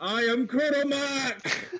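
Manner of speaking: booming, amplified voice. Throwing arms in the air, a character magically announces itself in a booming voice. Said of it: "my voice boom".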